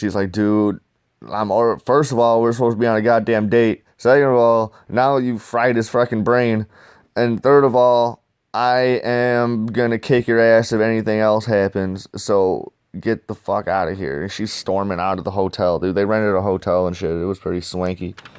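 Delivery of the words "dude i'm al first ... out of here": ordinary talk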